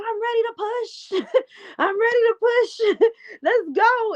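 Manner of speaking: desperate, eager, high-pitched pleading.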